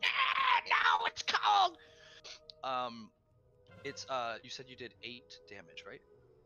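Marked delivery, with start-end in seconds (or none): 0.0-1.8 very high, loud, squealing imp cry. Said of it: "you hear it like".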